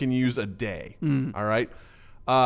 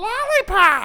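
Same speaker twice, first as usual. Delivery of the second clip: put-on tiny, very high babyish voice. Retelling a cartoon scene where a baby asks for something: imitating a baby's voice. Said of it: "and that was its voice".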